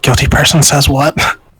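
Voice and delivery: hushed stage whisper, close to the mic. Speaking into the mic so it comes through quietly, the speaker is half-whispering. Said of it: "I'm gonna whisper through the mic".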